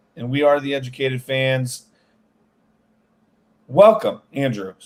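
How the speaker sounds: subdued, flat, low-energy delivery. Speaker welcoming andrew and the fans, low-energy. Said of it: "sorry for the less than energetic intro".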